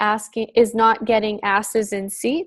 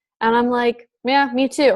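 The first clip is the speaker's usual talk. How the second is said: plain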